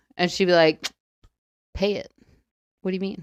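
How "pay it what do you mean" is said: put-on sassy voice, quieter. Imitating a grandmother brushing off a question about late rent: imitating a sassy grandmother. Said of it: "very sassy".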